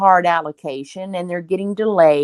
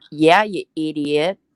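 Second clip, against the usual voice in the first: put-on sarcastic tone, lower pitch; 3 semitones lower than usual. Retelling the boss's reaction to someone's idea, imitating sarcasm. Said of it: "sarcasticness in my boss's voice".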